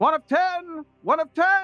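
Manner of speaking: loud calling out. A caller up top at the great stone gates, shouting. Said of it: "a caller from up top who simply shouts".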